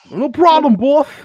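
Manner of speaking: very high, very loud, squealing caricature voice. Joking about putting candy wrappers on your teeth, Mike Tyson voice. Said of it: "talk like Mike Tyson".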